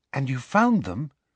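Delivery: hushed, quiet voice. Narrator reads a character's question at the tea table, hushed voice. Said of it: "said Hermione in a hushed voice".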